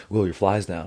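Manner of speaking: put-on deadpan delivery. Retelling how the ref walked up before the match: imitating a deadpan warning. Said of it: "super serious face".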